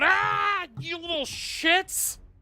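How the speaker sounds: very high, shrill, drawn-out screech. A game narrator voices a creature that just crashed down beside them, screeching out. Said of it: "as he screeches out".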